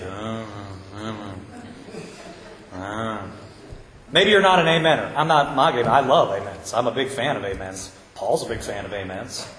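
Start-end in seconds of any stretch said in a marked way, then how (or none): 0.0-3.3 very quiet, hushed, slurred, low, barely audible mumble. Describing men in certain churches, imitating an unenunciated amen. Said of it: "Sometimes they don't even enunciate".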